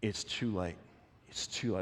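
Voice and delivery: soft, hushed whisper. Retelling how someone whispers bad news in Jairus' ear: imitating a whisper. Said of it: "they whisper in Jairus' ear".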